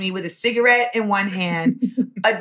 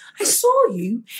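put-on British accent, higher; 4 semitones higher than usual. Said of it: "not cool with the accent all the time".

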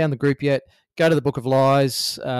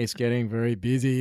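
acted, worn out and fatigued, tired weary delivery; 4 dB quieter than usual. Imitating the co-host's fatigue about the busy group: imitating Coxie sounding fatigued. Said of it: "the fatigue in your voice sometimes, Coxie".

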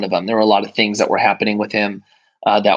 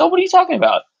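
very high, breezy, feigned innocence. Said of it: "he plays it off".

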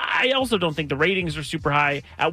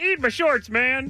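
put-on cartoon kid voice, pitched up high; 10 semitones higher than usual. Trying to recall a childhood impression, the speaker does a Bart Simpson impression. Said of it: "I did a good impression of Bart Simpson".

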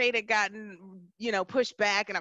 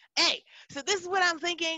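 put-on yell, higher pitch; 7 semitones higher than usual. Telling how you got the .com, re-enact yelling into the phone to your older sister. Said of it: "I'm like yelling into the phone".

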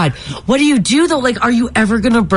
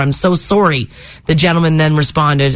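normal talking voice

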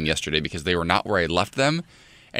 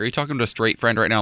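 plain

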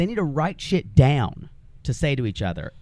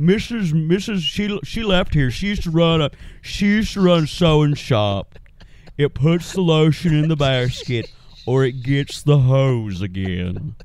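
put-on Southern accent, louder, slower; 5 dB louder than usual. Describing a man who talks like a Southern Buffalo Bill, doing that voice. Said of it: "talks like a Southern Buffalo Bill".

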